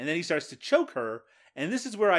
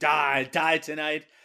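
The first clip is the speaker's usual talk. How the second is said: put-on screaming yell, hollered out; 3 dB louder than usual. Recapping a movie scene of a man screaming while driving: retelling a scream.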